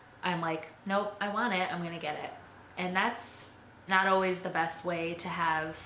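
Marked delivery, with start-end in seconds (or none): none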